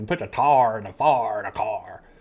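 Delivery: loud Georgia accent leaning on strong R sounds. Showing how a Georgia accent sounds: Georgia accent. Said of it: "The Georgia accent's, like, more like got a, they got an R".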